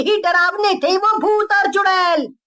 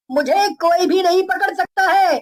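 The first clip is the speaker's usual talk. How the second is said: plain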